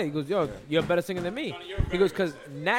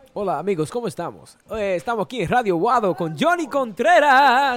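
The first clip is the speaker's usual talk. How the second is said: Spanish-accented radio announcer voice; 4 semitones higher, 8 dB louder than usual. Asked to show a Spanish accent, doing a radio intro in Spanish accent. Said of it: "Let me hear your Spanish accent".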